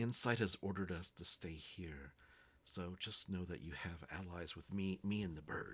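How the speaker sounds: whispering. A character speaks to the others: whispering. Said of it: "so he's whispering the entire time".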